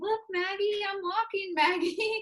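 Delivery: very high, tiny, cute, proud little voice. Retelling him walking on his own for the first time, imitating the cutest voice. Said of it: "with the cutest voice".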